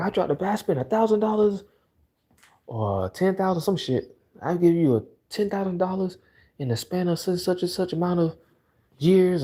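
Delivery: heated yelling. Retelling a video of a man yelling at his girlfriend: imitating someone yelling. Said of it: "yelling at her in public".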